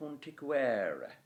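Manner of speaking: every vowel of quanticuere sounded, penultimate E stressed.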